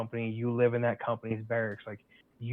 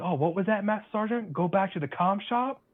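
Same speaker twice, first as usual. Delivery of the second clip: put-on, shrill, very high-pitched screech; 9 semitones higher, 3 dB louder than usual. Retelling how a soldier answered a master sergeant: imitating someone screaming. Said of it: "just screams".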